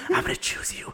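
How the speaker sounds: soft whispered words. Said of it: "he whispers to Madeline".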